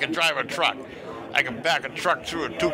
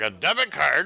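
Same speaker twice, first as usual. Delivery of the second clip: usual speaking voice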